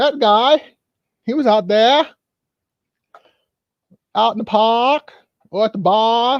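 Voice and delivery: put-on Boston accent. Describing the old co-host of a show, in a boston accent. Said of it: "I like doing Boston accents".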